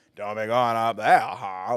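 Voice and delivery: put-on creepy Maine voice. Demonstrating how the voice is supposed to sound, creepy Maine accent like Jud. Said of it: "He's supposed to have that creepy main voice".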